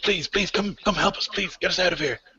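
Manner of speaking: frantic, desperate, high shouted begging cries. Voicing caged prisoners who plead for rescue: prisoners shouting for help. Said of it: "but they're shouting".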